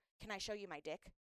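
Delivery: hushed, close, half-whispered stage whisper. Retelling what a guy in the restroom line said: imitating a half-whisper. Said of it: "whispers in my ear".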